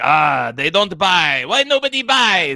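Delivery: put-on very loud, high, greasy grumbling old-man voice. Quoting Watto from the game, muttering Watto impression. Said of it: "he just mutters around like a greasy old man".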